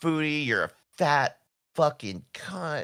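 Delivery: heated, vicious, high-pitched, worked-up nasty rant. Retelling how he would go off about Foodie Beauty, imitating Rev really worked up. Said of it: "get like really worked up about it".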